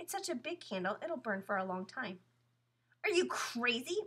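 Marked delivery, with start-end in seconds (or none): 3.0-4.0 words caught on a gasp. A character reacts as another picks up a show candle to light it; gasped. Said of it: "Mary Rose gasped".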